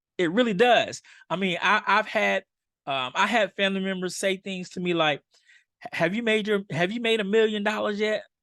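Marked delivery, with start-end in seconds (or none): 5.9-8.2 mock sarcastic tone, higher. Retelling a family member's question at a reunion: imitating a sarcastic question.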